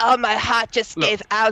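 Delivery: put-on Russian accent. Quoting in an improv scene how someone died: Russian accent. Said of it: "with my Russian accent".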